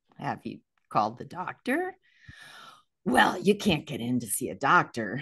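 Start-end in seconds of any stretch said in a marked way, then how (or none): 0.2-2.0 very calm and quieter. Retelling what they said to a man who hasn't felt good, retelling speaking very calmly. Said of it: "I said very calmly".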